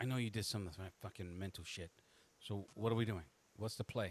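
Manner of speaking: soft, secretive half-whispered aside. Narrating a game scene where the player's partner speaks to them: half-whispering. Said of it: "she's whispering to you".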